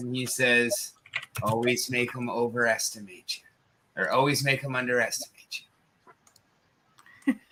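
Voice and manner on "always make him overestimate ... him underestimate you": knowing rasp, slyly delivered. A storyteller voices a character with a walker answering an offer of help: raspy voice. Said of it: "with a sly wink and a raspy voice".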